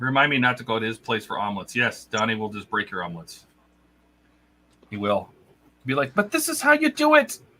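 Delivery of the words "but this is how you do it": put-on Scottish accent, pitched way up. Mocking how Donnie would correct your omelets, Donnie in a Scottish accent. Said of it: "Why'd you make him Scottish?".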